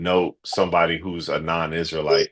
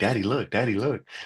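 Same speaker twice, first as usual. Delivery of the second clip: put-on voice of a small girl; 3 semitones higher, 5 dB quieter than usual. Retelling what a daughter says to get attention: imitating a daughter. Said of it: "She be like".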